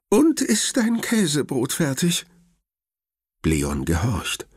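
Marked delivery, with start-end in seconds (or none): 0.1-2.2 quavering, trembling, very high-pitched voice. Narrator reading Grandma during a thunderstorm, with a trembling voice. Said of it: "sagt Oma mit zitternder Stimme".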